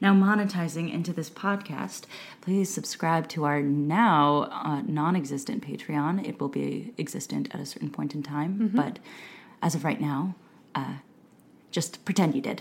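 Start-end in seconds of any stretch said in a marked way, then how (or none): 2.4-12.6 sultry, low-key storyteller voice. Podcast host asking listeners to subscribe to the patreon, in a sultry voice. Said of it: "I really like the sultry voice you just moved into".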